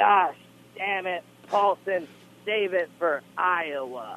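high, slow, drawn-out scream, "Iowa" stretched out. Retelling how the coach screamed across the room: Bobby Douglas impersonation, screaming. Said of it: "Bobby Douglas screamed from the".

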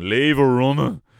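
put-on very loud shout in a broad Dublin accent. Retelling one of the lads shouting across the house, in a big dublin accent. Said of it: "in his big Dublin accent".

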